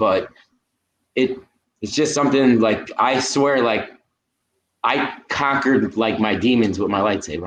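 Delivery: halting, heartfelt, emotional voice, full of feeling. Telling another speaker about saber therapy, getting a little emotional. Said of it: "I get a little emotional".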